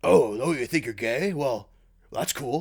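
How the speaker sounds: unhurried, slightly deepened voice. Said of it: "That's not a half bad Maury".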